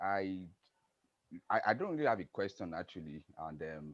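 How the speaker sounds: very soft, barely audible voice.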